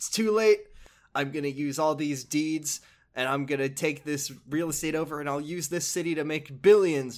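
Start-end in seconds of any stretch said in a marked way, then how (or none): none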